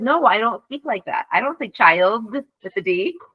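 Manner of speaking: usual speaking voice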